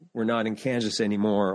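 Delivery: ordinary delivery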